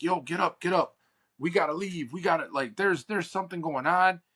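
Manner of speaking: fast scream, voice pitched high. Recapping a movie, retelling the husband screaming at his wife. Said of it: "he's like screaming at her".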